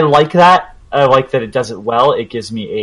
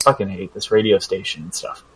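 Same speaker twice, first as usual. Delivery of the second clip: quiet mumbling under the breath; 3 semitones lower, 7 dB quieter than usual. Retelling a game character alone in a forest: imitating someone mumbling to himself. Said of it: "mumbling to himself".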